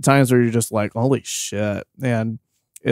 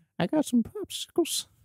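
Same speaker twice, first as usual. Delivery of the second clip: put-on high, creepy old man voice; 9 dB quieter than usual. Joking about a creepy old pervert: Family Guy creepy pervert voice. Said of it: "You sound like the Family Guy".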